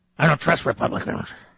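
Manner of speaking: mocking an angry man. Mocking a caller who hung up, imitating an angry man. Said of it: "That's one angry man there".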